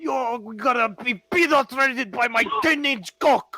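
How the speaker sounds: put-on Russian accent. Speaker acts out crude trash talk in a heavy Russian-sounding accent. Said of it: "Why do you sound Russian?".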